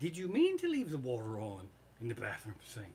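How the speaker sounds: play-acted kind, polite, low, gentle sing-song tone. Recounting what his wife said to him after his mistake; retelling wife's gentle question. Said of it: "my darling sweetheart of a wife said".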